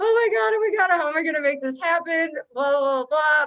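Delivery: play-acted, high, frantic, panicked freak-out. Retelling days of losing one's mind over licensing: imitating own past panic. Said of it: "losing my mind".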